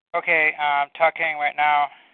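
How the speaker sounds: super nasal voice. Talking after switching to an older speaker for the call: super nasal voice. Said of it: "you sound super nasally".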